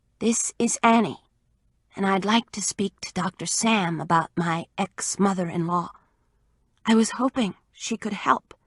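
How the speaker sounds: breathy female voice. Reading aloud a woman's taped message to a radio doctor: breathy woman's voice. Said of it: "a woman's breathy voice".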